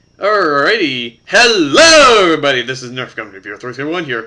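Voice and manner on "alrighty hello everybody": very loud, happy voice, "hello" drawn out. Opening a video and greeting everybody watching, loud voice. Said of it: "Sorry for the loud voice".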